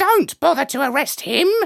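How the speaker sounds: very high, creaky, rough bird-like squawk. A narrator voices the Major telling the humans not to arrest him, squawking. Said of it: "he squawked".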